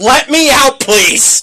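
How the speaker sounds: acted, high, drawn-out suffering dog scream in words.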